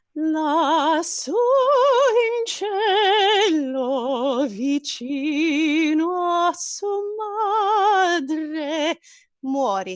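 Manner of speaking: sugary-sweet, high, very slowly drawn out. Speaking as a character casting a killing spell: saying it very sweetly with a smile. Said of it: "she's gonna say very sweetly with a smile on her face".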